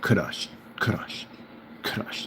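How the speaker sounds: Russian-style rolled r. Speaker repeating a favourite word with a Russian-style rolled r. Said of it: "Got like a little roll in there. Russians say it that way".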